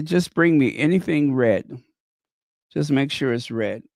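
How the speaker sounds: ordinary talk, nothing marked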